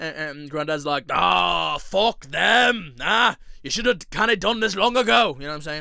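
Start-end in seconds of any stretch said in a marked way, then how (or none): 1.1-5.3 bad, rough, weak Scottish accent, loud and slow. Voicing a granddad while reading a post, bad Scottish accent. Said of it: "You probably heard with the Granddad".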